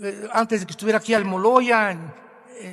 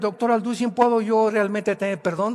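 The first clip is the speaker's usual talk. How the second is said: usual speaking voice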